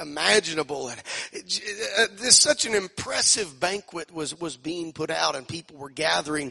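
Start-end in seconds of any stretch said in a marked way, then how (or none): none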